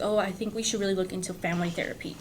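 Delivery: ordinary talk, nothing marked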